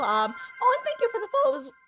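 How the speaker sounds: very high, fast cracking voice break. Thanking someone for the follow, voice cracking. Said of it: "my voice cracked".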